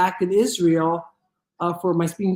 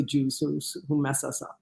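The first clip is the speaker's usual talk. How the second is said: usual speaking voice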